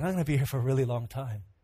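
weary, worn out, low and soft. Retelling Adam naming animals, imitating Adam growing tired. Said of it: "he began getting tired".

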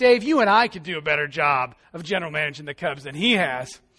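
acted joking manner. Quoting what a friend said to him, retelling a joking remark. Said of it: "Josh jokingly says to me".

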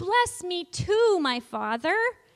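crying out. Showing listeners how to say a line with a hand on the heart: said really loudly. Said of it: "Really loudly say".

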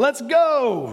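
put-on excited shout, high, "go" drawn out. Retelling a cheer after finally landing a trick shot: imitating own excited shout. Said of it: "I said it with a really excited voice".

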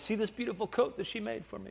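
put-on accent with Yiddish-influenced sound.

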